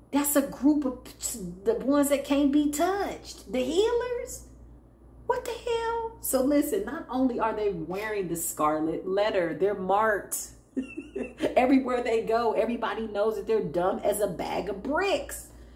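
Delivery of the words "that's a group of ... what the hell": incredulous put-on voice. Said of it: "They like".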